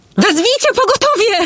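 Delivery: urgent crying out, very high-pitched. Narrating a novel, a woman calls to onlookers beside an injured girl; shouting. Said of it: "Krzyknęła".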